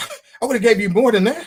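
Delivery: high, loud laughing delivery. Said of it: "And it's like, man".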